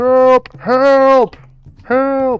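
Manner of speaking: distant, muffled, very high-pitched cry. Retelling a man's cries heard through a door, in a muffled voice. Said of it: "it's it's kind of muffled".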